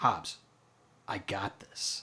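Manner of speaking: very quiet, slow, breathy, drawn-out near-whisper. Retelling a movie scene, imitating Dom speaking very quietly. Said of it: "Dom just very quietly goes".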